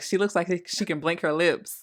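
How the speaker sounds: plain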